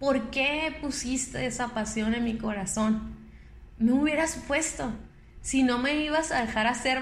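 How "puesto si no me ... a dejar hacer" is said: normal talking voice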